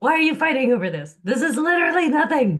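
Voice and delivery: loud, high-pitched yelling. Retelling someone yelling at the kids: imitating Amelia yelling. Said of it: "hear Amelia yelling at the kids".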